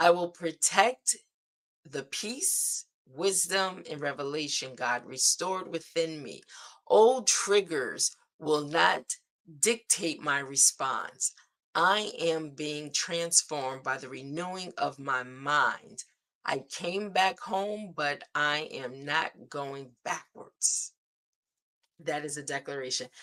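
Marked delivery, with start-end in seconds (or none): 0.0-20.9 slow, read-aloud delivery. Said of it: "I'll read it slow".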